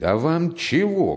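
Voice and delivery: fed-up, irritated, growing angrier. In a read story, the caretaker shouts again at a man, getting angry. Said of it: "крикнул опять дворник, начинавший серьезно сердиться".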